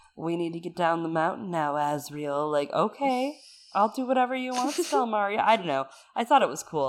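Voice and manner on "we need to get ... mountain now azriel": acted seductive voice. Speaker describing a favourite daemon's voice, sultry Stelmaria voice. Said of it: "Very sultry".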